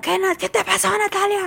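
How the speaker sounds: put-on very high, raspy, rough shouting yell. Retelling how her dad yelled after she was nearly run over, retelling her dad's shout. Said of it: "mi papá me gritó como".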